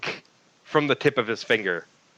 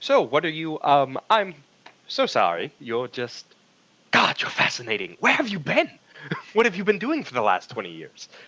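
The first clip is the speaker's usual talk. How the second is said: sheepish, apologetic words tumbling out with swooping pitch; 3 semitones higher than usual. Storyteller voicing a character who just bowed and stood back up, sheepish. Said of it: "he sheepishly is like".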